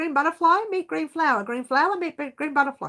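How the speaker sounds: fast, rushed, high-pitched rattling delivery. A host greeting viewers tries a tongue-twister, saying it fast. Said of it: "I'm trying to say that fast".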